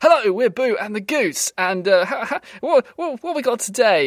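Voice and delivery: Oxbridge sketch comedian voice. Pitching a comedy double act of a sketch comedian and a goose, Oxbridge sketch comedian voice. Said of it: "your sort of classic Oxbridge sketch comedian".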